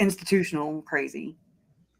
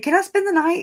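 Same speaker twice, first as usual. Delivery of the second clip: put-on very high, adamant, insistent, innocent little-kid voice; 13 semitones higher, 5 dB louder than usual. Retelling what she'd ask at the picnic table, imitating an adamant, innocent girl. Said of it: "she's so damn adamant and so innocent".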